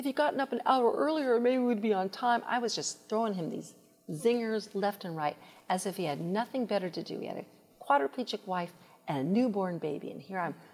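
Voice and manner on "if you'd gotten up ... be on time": loud, high, scolding barking yell. Speaker recalling barking orders at her husband one Saturday morning, retelling a yell. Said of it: "I was screaming, I'm yelling".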